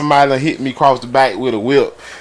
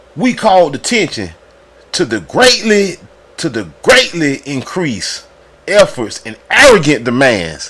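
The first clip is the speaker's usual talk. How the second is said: reading aloud with angry, indignant outrage. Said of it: "I'm trying to read it like how he was writing".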